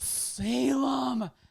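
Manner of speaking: appalled, stern, drawn out. Retelling how he called out to the dog Salem, imitating his stern voice. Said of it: "with his most appalling and stern voice I've ever heard".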